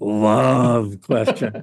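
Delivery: macho, deep manly voice, love drawn out. Introducing the traditional love question to a guest, manly tone on love. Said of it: "I always have to say the word love like in a manly tone".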